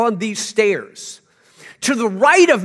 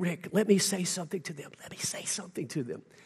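very quiet whisper from right beside the listener; 3 semitones lower, 16 dB quieter than usual. Retelling how the former pastor leaned over: imitating someone whispering. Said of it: "he started whispering to me".

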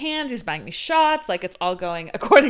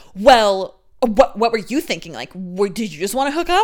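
put-out, defensive, pressing tone. Retelling how he answered after she agreed: imitating a defensive tone. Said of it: "he got all defensive".

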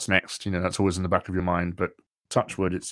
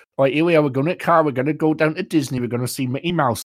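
put-on Newcastle Geordie accent, loud and high-pitched; 8 semitones higher, 7 dB louder than usual. Retelling someone doing a Geordie accent for an American friend, Geordie accent. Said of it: "do a Geordie accent for Robert".

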